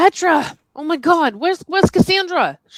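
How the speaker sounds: yelling. Voicing a character who calls for missing companions: yelling. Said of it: "she's yelling".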